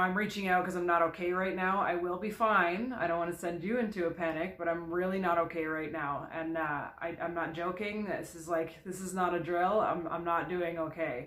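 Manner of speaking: ordinary talk, nothing marked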